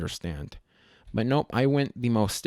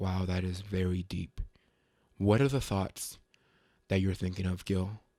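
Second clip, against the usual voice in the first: put-on grave, weighty voice, soft and musing; 5 semitones lower, 7 dB quieter than usual. Describing how he talks to himself while looking at art: put-on serious voice. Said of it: "like that voice, it got serious".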